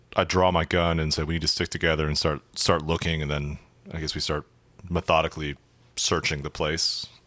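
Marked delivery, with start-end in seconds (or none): none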